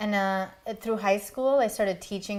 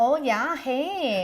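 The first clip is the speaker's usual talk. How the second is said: Yooper accent with raised pitch; 5 semitones higher than usual. Showing how people up north talk: Yooper accent. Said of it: "you get some of the Yooper accent".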